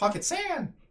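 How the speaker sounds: pitched way up, very high. Demonstrating how a voice skill said a phrase, in a higher pitch. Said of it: "it was said in a higher pitch".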